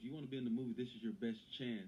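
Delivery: ordinary delivery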